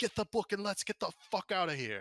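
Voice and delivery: high-pitched shouted yell. Voicing a character urging escape: character yelling. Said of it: "he just yells".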